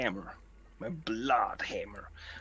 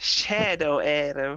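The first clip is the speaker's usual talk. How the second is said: put-on loud, high-pitched English accent; 5 semitones higher, 6 dB louder than usual. Imitating a player who comes in with an attack: imitating Keith's offensive English voice. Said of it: "he has a very offensive English voice".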